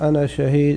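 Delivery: ordinary talk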